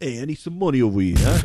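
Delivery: put-on accent from Queens. Imitate a man asking for money, in a genuine Queens accent. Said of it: "He had a genuine Queens accent".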